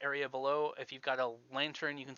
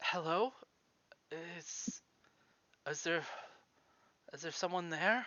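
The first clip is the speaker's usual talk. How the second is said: weak, feeble voice, quieter; 3 semitones higher, 4 dB quieter than usual. Running a tabletop game, voicing someone below an opened hatch: weak voice. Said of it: "you hear a weak voice down below".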